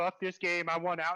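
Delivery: frustrated, fed-up blurted outburst. Retelling a fellow player's outburst during the game: imitating PTB's frustration. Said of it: "the frustration and the voting".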